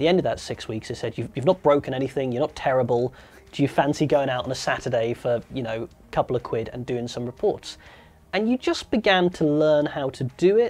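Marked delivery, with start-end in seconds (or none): none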